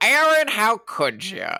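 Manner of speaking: put-on American accent, pitched way up. Quoting a favorite film performance: Albert Finney's American accent. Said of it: "He's just talking like this".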